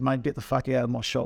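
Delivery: normal talking voice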